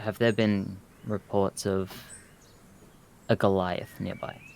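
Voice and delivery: very hushed, quiet, discreet, secretive delivery. Playing a role, the speaker questions a nearby person, in a very hushed tone. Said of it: "in a very hushed tone".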